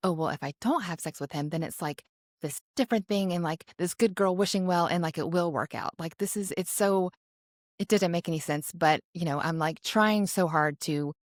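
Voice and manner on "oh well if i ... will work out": ordinary talk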